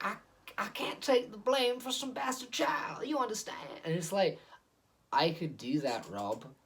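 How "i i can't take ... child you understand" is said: extreme, over-the-top preacher voice, very high-pitched. Imitating an actor's big, bad, loud acting in The Devil All the Time, in an over-the-top preacher voice. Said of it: "this beyond sort of preacher voice".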